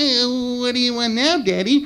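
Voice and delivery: slow, high, goofy cartoon character voice. Retelling how you answered your father one morning while you two talked in cartoon voices. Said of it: "we used to talk to each other in cartoon voices".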